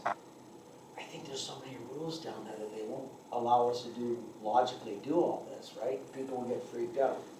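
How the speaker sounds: half-whispered, barely audible throughout. Retelling what Mark said about the rules: imitating Mark half-whispering. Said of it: "he kinda whispered".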